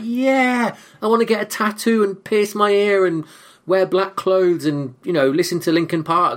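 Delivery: high-voiced, mock eager, wannabe-edgy teen voice.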